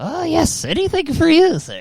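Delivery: very high, swooping put-on medieval goblin servant voice. Imagining a medieval goblin assistant who hobbles around: poor medieval goblin servant voice. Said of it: "a poor troll slash goblin from medieval times who's just like".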